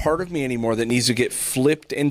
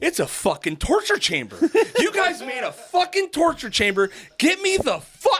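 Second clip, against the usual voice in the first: mock very high, swooping, top-of-the-lungs shouting; 14 semitones higher than usual. Answering the guy who asked how it was: retelling a loud yell. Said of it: "as loud as you could possibly be".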